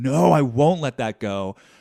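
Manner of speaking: loud, slow, angry, stubborn voice. Voicing an inner voice that refuses to let go: imitating an angry inner voice. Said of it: "I just feel this angry voice in me that says".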